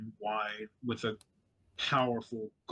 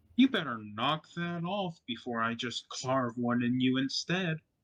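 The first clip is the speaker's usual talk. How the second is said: odd, strange feminine voice, calling out from afar; 2 semitones higher, 3 dB louder than usual. Narrating a story, a voice calls from outside the cell: strange feminine voice. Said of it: "a strange feminine voice calling".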